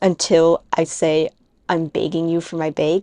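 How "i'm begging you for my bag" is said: Wisconsin vowels in "begging" and "bag". Speaker demonstrating their own pronunciation, in a Wisconsin accent. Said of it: "how much of like a quote unquote Wisconsin accent I had".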